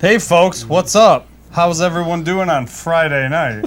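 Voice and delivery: fake-bright, cheery, insincere TV host patter. Greeting the audience on a Friday night, in a cheery, insincere TV voice. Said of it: "I like doing that cheery, insincere TV".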